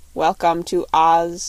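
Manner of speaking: flat monotone voice. Narrator voicing the copper man's line in the story; monotonous copper-man voice. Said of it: "said the copper man in a monotonous voice".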